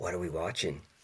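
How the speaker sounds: half-whisper, very soft, barely audible. Retelling how a friend half-whispered in a wife's ear: imitating a half-whisper. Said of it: "he just whispers in her ear".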